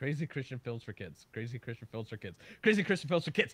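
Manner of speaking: said very quickly, repeated three times. Taking up a say-it-three-times challenge on a live stream, saying a tongue twister fast. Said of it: "Say that 3 times fast".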